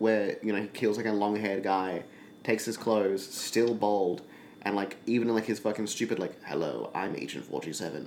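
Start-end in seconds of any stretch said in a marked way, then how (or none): 6.4-8.1 low, soft, hushed put-on dumb voice. Describing an imagined game scene, mocking him in a dumb Agent 47 voice. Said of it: "his dumb voice he has".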